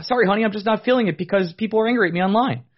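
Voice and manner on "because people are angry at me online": normal talking voice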